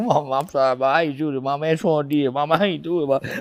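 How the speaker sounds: acted, tearful, crying, pleading voice. Retelling pleading to a crying mama: imitating own past crying. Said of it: "I was crying like a mother".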